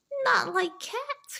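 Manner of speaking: high, shrill, impassioned mouse-like cry. The mouse cries out to Alice, in a shrill, passionate voice. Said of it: "cried the mouse in a shrill, passionate voice".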